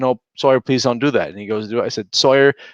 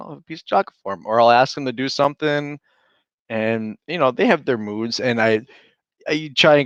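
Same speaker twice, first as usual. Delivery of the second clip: ordinary talk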